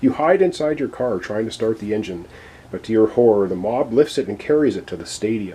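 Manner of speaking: ordinary delivery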